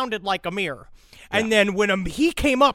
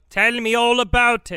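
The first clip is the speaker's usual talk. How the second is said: slow, measured, drawn-out, deliberate put-on voice; 3 semitones higher, 4 dB louder than usual. Retelling how an investigator answered an inmate, in a Nick Broomfield voice. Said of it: "that's the Nick Broomfield jo-, voice".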